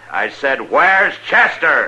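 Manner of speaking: bellowed, high-pitched yell. Repeating a question about Chester to a man who didn't catch it, yelling. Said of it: "Don't yell like that".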